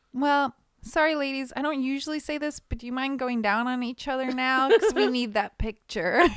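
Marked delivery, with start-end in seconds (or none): 0.2-4.7 put-on very polite, nice tone, much higher. Retelling what the speaker used to say to the models: retelling asking in the nicest way. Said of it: "I would say it in the, like, the nicest way".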